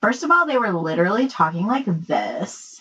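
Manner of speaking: put-on gossipy Valley Girl speaking voice. Telling a friend about two women gossiping at work, in a valley girl voice. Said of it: "Valley Girl, right?".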